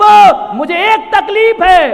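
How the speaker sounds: high, slow, plaintive woman's voice.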